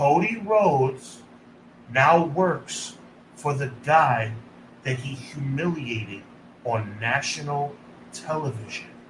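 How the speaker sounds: very slow, low, deliberate, word by word. Making one last point before moving on, saying it very slowly. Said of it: "I'm going to say this very slowly".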